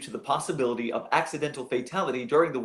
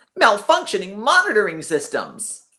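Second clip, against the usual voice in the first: very loud, obnoxious, swooping blare; 7 semitones higher, 9 dB louder than usual. Trying to read a line in a deep voice, landing instead in a loud, obnoxious voice. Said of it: "I can only say it in a loud, obnoxious voice".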